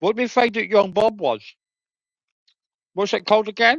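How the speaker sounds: speaking with food in mouth. Speaking to the guys while eating food: talking while eating. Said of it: "Sorry, guys, I'm eating food".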